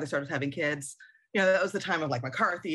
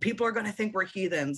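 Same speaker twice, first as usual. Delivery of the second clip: mock, mild, half-screamed scolding tone; 4 semitones higher than usual. Retelling a great-grandmother's quarrel with her son: imitating someone screaming. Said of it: "screamed at him".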